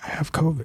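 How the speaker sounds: hushed, muttered under the breath. Retelling telling the desk clerk about covid: imitating saying under his breath. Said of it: "under my breath".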